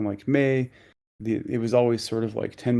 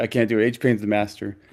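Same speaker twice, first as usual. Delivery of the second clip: usual speaking voice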